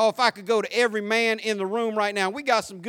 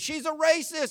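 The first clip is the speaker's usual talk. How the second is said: acted, high, accusing shriek; 7 semitones higher, 3 dB quieter than usual. Retelling a video of a man accusing a woman: imitating a man screaming. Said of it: "he starts screaming".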